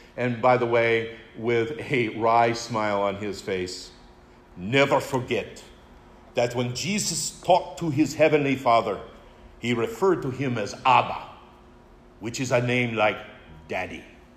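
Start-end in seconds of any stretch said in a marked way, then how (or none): 4.6-14.1 put-on English spoken in a Hungarian Hebrew accent. Recalling an off-the-cuff comment he made to us, in Stephen Sixsai's Hungarian Hebrew accent. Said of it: "in that wonderful Hungarian Hebrew accent of his".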